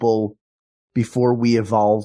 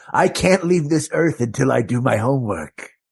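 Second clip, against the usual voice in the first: put-on ghostly old man voice; 3 semitones higher than usual. Playing a ghost stuck on a park bench: ghostly old man. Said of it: "my hand is going right through you".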